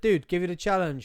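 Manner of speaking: plain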